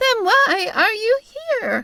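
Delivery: very high, squeaky troll-doll voice. A woman speaks through a troll doll held up to her face: squeaky voice. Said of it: "she asked in a squeaky voice".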